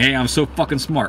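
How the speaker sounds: ordinary delivery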